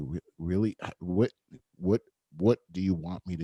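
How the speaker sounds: speaking low and slow. Recalling how they spoke when confronting these situations, lowered, slow voice. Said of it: "I would lower my voice and I would talk slowly".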